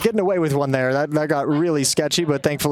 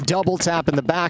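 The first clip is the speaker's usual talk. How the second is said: plain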